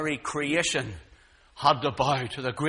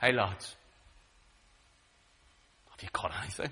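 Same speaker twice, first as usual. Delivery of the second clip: low, soft, close-up intimate voice; 6 semitones lower, 5 dB quieter than usual. Speaker acts out a call across the waters to the lads, intimate tone. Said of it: "He says in an intimate tone".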